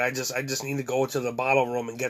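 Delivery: ordinary talk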